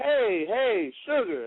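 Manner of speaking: high mock child's yell.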